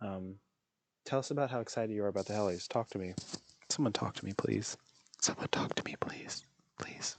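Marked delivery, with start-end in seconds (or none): 2.7-7.2 soft, breathy ASMR whisper. Trying an ASMR bit for the chat: put-on ASMR voice. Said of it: "that's my A S M R".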